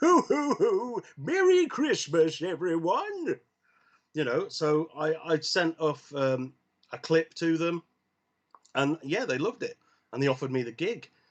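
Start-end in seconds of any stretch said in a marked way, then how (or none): 0.0-3.4 jolly, high-pitched, drawn-out and unhurried. Voiceover actor showing the voice he offered for a Santa app job: Santa voice. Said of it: "I could do a Santa voice".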